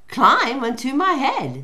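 sly smirking voice. Narrator reads the fox's reply to the gingerbread man, smirking. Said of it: "smirked the fox".

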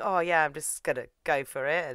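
usual speaking voice

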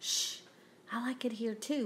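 soft, hushed whisper. Mike answers Frankie, who does not want to leave, whispered. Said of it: "whispered Mike".

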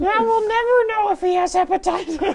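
high, wailing goblin voice.

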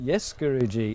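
normal talking voice

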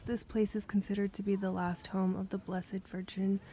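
ordinary delivery

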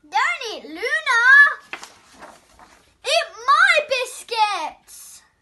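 very loud, high, rising, drawn-out cry. Reading a story, a character runs toward the wolf, crying out. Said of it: "he cried".

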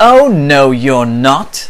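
very loud, slow, drawn-out battle cry. Captain Flynn answers the Tyrannosaurus Rex's threat before charging; yelled. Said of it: "yelled Captain Flynn".

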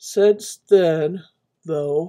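yawning while talking. Recounting a personal story: yawning while talking. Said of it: "I'm so sorry I keep yawning".

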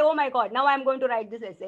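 ordinary delivery

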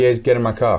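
ordinary talk, nothing marked

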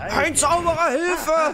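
high, loud panicked shout.

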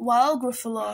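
ordinary delivery

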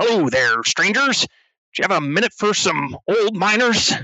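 put-on high-pitched elderly dwarf miner voice. Narrating a scene, voicing an old dwarf approaching strangers at the terminal, elderly dwarf miner voice. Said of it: "one of them approaches and says".

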